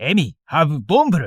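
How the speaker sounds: put-on strong accent in broken English. Retelling what a friend said: imitating a strong accent. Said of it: "Yuto had a strong accent and very limited English".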